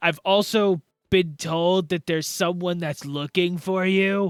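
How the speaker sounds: kobold creature voice. Voicing a kobold calling through a door hole: kobold voice. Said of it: "you hear the kobold".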